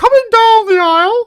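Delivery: shrill, very high, loud, booming arena ring-announcer bellow. Asked to let the others hear his impression, Howard Finkel impression. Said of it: "let's hear it".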